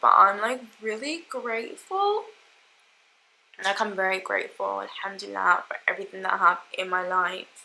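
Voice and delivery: tearful, teary, moved, emotional thankfulness. Talking to your listeners, unsure why it is coming over you, getting emotional, happy tears. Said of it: "I don't know why I am getting emotional".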